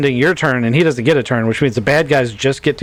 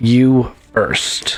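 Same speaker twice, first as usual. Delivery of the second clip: very mechanical, machine-like synthetic robotic voice. Describing a character turning to look at you, speaking in a very mechanical voice. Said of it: "a very mechanical voice that isn't her".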